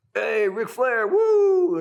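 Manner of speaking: loud, very slow, drawn-out, play-acted starstruck excited voice. Retelling how college-age guys walked over to greet a wrestler: imitating excited fans. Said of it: "So they kind of walk over and".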